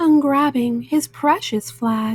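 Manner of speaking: ordinary delivery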